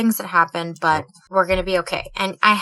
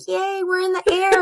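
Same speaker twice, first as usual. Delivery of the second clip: put-on bubbly, high, excited, delighted little-kid cheer; 12 semitones higher than usual. Retelling their daughter beside them on a plane, imitating an excited daughter. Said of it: "she was so excited to be on a plane".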